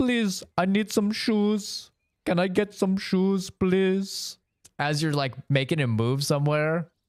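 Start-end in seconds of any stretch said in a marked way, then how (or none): 0.0-4.4 crude put-on Indian accent. Imitating a unit from an old video game: imitating a stereotypical Indian accent. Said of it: "in the most racist stereotypical accent".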